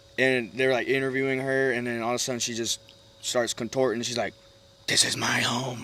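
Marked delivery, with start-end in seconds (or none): 4.9-5.8 put-on rough old man's voice. Retelling a movie scene where an interviewed woman starts contorting, in a grungy old man voice. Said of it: "man voice".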